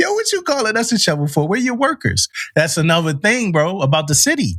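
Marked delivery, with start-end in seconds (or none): 0.0-2.3 jokey, laughing banter, pitched up and swooping. Retelling how soldiers shoveling snow joked: imitating soldiers laughing while talking. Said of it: "they out there laughing like".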